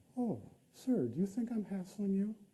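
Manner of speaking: unruffled polite calm. Retelling the reply of people who hassle him at the border: imitating a very calm demeanor. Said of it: "very calm demeanor".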